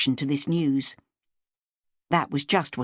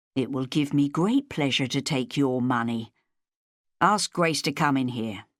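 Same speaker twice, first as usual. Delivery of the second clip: plain reading voice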